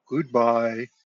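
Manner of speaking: deep, reverberating, resonant, echoing voice. A narrator voices a figure waving goodbye to the four players, deep reverberating voice. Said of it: "that deep, like reverberating voice in your head".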